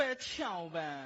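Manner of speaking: low, slow, drawn-out pleading in dialect.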